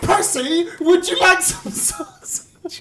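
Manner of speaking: put-on very high, shrieking, screaming yell. Telling of a troll poking sausage up a bear's nose, screaming. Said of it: "Screaming out".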